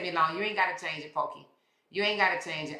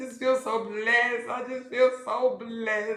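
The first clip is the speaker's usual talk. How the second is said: put-on high, teary, blubbering crybaby sob; 6 semitones higher than usual. Retelling what a crying girl said: imitating a crying girl. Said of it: "this damn crybaby child".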